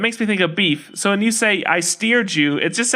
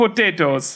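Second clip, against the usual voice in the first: put-on, fake Irish accent; 3 semitones lower than usual. Guessing how Scottish people sound, using a put-on Irish accent. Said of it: "That's Irish".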